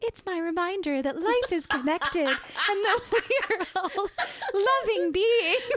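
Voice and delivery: very high, loud, put-on forced cheerfulness. Recounting the speaker's own past words in a story, mock-cheery. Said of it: "trying to cheerily be like".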